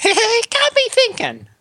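very high, slow, swooping cartoon voice. Acting out what the joke app says: funny Talking Tom voice. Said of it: "in the funny Talking Tom voice".

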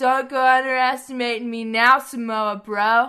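loud, belted, taunting wrestling promo voice. Reading out a wrestling feud segment, doing a Matt Riddle impression. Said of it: "Riddle impression there".

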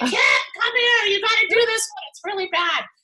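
high-pitched mock gagging mid-sentence. Retelling a husband changing a diaper: imitating husband gagging while talking. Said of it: "would start gagging and say".

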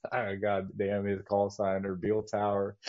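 plain

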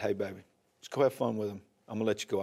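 very soft, low, steady, brave-sounding voice.

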